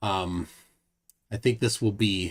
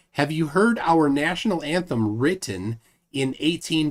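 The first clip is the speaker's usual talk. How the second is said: normal talking voice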